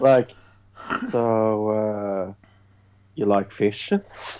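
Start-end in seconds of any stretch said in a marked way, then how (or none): 1.1-4.4 slow, clumsy, awkward and pathetic flirty tone. Retelling how the store owner hits on Esther: imitating awkward flirting.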